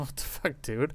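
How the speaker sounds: baffled, breathy half-whisper full of confusion. Voicing a puzzled character reacting to the guests: puzzled. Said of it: "he just looks puzzled, like".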